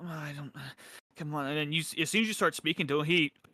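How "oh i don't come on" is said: soft mumbling murmur, spoken to himself. Voicing a busy shop elf before a customer speaks: murmuring to himself. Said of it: "murmuring to himself".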